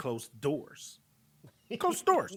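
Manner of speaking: put-on whisper, level, flat and matter-of-fact. Retelling being told to close the doors, repeating the order in a matter-of-fact way. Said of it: "It was it was very matter of fact".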